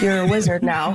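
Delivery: normal talking voice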